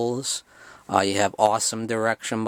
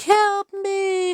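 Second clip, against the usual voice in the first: put-on very high, pitched-up small child voice; 4 dB louder than usual. Describing a horror movie scene: imitating Betsy Palmer's child voice. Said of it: "She sounds like a child".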